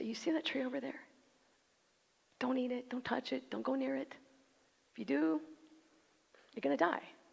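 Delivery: caring, loving father voice, slightly creaky. A preacher shows how God's warning could sound, in a loving father's voice. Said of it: "the tone and the voice of a loving father say".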